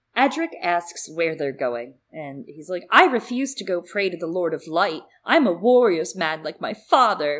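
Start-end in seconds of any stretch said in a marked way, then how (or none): 2.9-7.4 put-on loud, spirited, plucky young kid voice. Retelling a book scene, quoting a boy as a plucky young kid. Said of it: "like a very plucky young kid".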